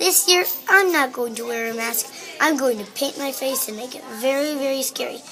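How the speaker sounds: ordinary delivery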